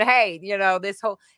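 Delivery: ordinary delivery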